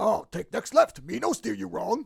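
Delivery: raspy, rough, growly puppet monster voice. Imitating the Cookie Monster GPS giving directions: Cookie Monster voice. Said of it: "'cause he talks kinda like Yoda talks".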